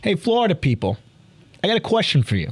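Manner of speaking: put-on New York accent. Imitating a man from a viral phone video, in a put-on new york accent. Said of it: "that New York accent".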